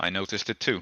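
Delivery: grim, low, quiet voice. A player voicing his character's reply to another character, in a low voice. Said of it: "just says in a low voice".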